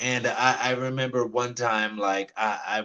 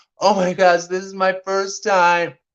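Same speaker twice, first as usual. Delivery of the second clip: put-on very loud, high, thrilled, excited gushing; 9 semitones higher, 9 dB louder than usual. Retelling a first bus ride, talking to the bus driver: mock excited gushing. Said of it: "I was like gushing to the bus driver".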